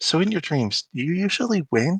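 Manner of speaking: hushed, quiet half-whisper. Voicing a character who leans over to another character: half-whispering in character. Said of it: "whisper to, to Sterling and be like".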